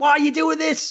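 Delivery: high mock scream, yelling.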